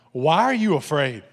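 loud, irritated, biting angry sarcasm. Imagining him addressing his disciples, the speaker voices it mock-angry and sarcastic. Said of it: "What if he was angry?".

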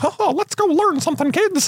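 very high, preschool cartoon mouse voice. Describing Mickey's many moods to another speaker: Mickey Mouse Clubhouse Mickey voice. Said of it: "there's like Mickey Mouse Clubhouse Mickey".

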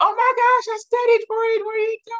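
frantic, very high-pitched, shrill panicked cry. Telling how half the class reacted to skipping a test, imitating panicked students. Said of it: "half the class is panicking".

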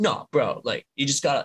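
put-on bro-style voice. Imitating a friend explaining another person's perspective: Johnny's bro voice. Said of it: "he has the most bro voice ever".

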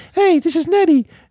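squeaky, little, very high-pitched voice. Retelling how he voiced a fish scooped from an aquarium, high-pitched Nettie voice. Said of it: "he would start doing this little high pitched voice".

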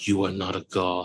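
slow, hushed half-whisper. Playing the slave who walks beside a victor in the Colosseum: half-whispering in someone's ear. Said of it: "the slave who whispers in your ear".

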